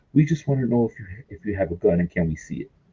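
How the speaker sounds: hushed stage whisper. Retelling what a group asked each other, imitating someone half-whispering. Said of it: "whispering to each other".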